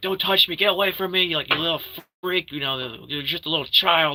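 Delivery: frantic freak-out. Retelling a film scene where a character is freaking out: imitating someone freaking out. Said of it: "she's, like, freaking out".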